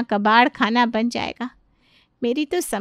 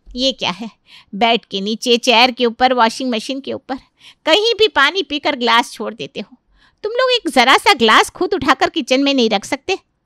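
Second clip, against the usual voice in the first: usual speaking voice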